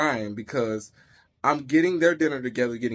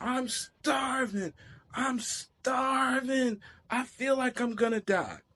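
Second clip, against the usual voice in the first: put-on very slow, high-pitched, drawn-out child's yell; 11 semitones higher, 5 dB quieter than usual. Retelling what the child keeps saying day after day: imitating a child yelling. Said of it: "keeps yelling out".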